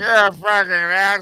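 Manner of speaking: put-on drunk voice. Retelling a video of a drunk driver: imitating a drunk driver. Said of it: "the guy's like".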